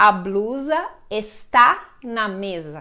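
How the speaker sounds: está stressed and stretched out slowly. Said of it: "eu posso falar".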